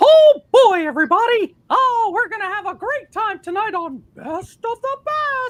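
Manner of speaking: very high-pitched, loud cartoon mouse voice. After being told to do it, greeting everybody in a Mickey Mouse voice. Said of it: "You have to do the Mickey Mouse voice".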